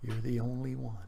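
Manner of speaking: put-on low whisper. Retelling a comment made at the first PT formation: imitating a low whisper. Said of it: "in a low whisper".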